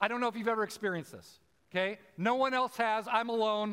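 ordinary talk

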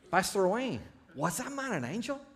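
put-on Latin American Spanish accent.

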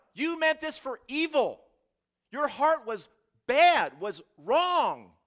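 very high, very loud, drawn-out bellowing yell. Acting out Joseph's words to his brothers: acting out a yell. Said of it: "I don't know why I'm yelling it".

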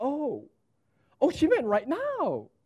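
high, rising tone of sudden dawning realization.

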